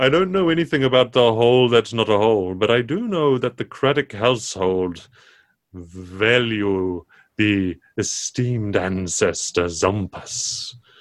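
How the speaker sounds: talking camel character voice. A game master voices a fortune-telling camel answering the players, camel character voice. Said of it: "And the camel tilts its head and looks at you and says, "Well, I hear you got off on the wrong foot with young Henry." / I would be happy to read your fortunes in the stars for you." And he long neck".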